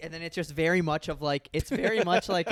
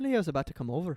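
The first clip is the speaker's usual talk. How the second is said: convincing, well-nailed put-on Irish accent; 4 dB quieter than usual. Asked by another person to say the line in an Irish accent: Irish accent. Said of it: "say it in an Irish accent".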